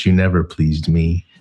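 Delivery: put-on demure tone. Quoting a line from Count of Monte Cristo: demure kind of voice. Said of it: "in a demure kind of voice".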